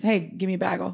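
normal talking voice

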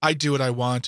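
ordinary talk

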